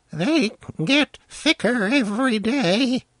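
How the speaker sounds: very high, unsteady, thin falsetto. Narrator reads the old man's complaint to the boy, in a thin, undependable falsetto. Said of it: "he complained in a thin, undependable falsetto".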